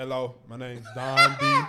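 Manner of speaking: slow, loud, each word carefully enunciated. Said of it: "I just talk slower".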